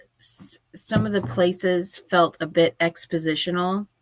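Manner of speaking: plain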